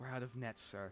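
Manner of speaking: low-key, hushed half-whispered aside. A character looks over to the woman in armor; half-whispering. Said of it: "kind of whispers over to her".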